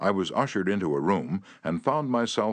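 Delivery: ordinary delivery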